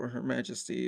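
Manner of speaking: normal talking voice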